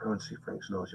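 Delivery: hushed, breathy, quiet whisper. Acting out how people once passed on a secret: imitating a whisper. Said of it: "a little secret you whisper".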